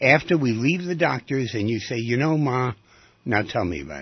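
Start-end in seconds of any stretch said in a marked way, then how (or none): none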